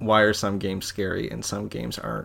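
normal talking voice

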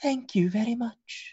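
very high, beautiful, pretty feminine voice. Narrating the table scene, a character thanks a player in an almost beautiful feminine voice. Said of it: "in a like almost beautiful feminine voice out of this kinku says".

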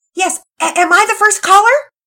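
very high, very loud, shrill shouting. Pearson on the phone with Ash Wells, shouting into the phone. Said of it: "Pearson shouted into the phone".

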